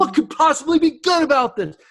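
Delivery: very high-pitched, exclaiming delivery. Demonstrating the mind's habitual reaction, spoken as an exclamatory statement. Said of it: "Did you hear the exclamation point?".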